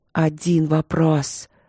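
soft, rustling whisper. Narrator reading the she-bear's words as she scatters into dandelion seeds, rustling whisper. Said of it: "прошелестела медведица".

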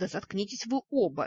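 ordinary delivery, nothing marked

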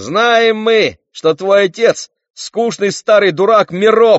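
very high, loud, mocking, jeering shout. One of the jeering boys calls out to another boy; shouted. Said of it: "выкрикнул кто-то".

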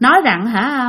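usual speaking voice

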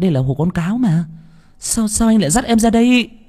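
very high, shaky, trembling, terrified pleading voice. Narrator reading a frightened woman's words at the village edge, trembling frightened voice. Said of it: "nói bằng cái giọng run run".

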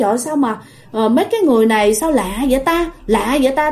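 ordinary talk, nothing marked

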